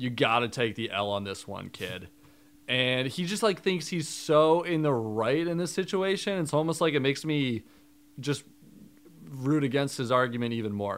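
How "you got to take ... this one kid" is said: mock condescending tone, lower pitch. Recapping an argument, quoting Devin talking down to Tori, retelling a condescending line. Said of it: "Devin says so condescendingly".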